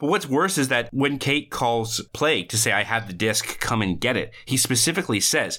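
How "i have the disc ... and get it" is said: ordinary delivery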